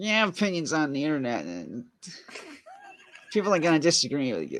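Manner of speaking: high, swooping put-on voice. Quoting what Top Loaded says, in a Top Loaded voice. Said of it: "can we do it in a Top Loaded voice?".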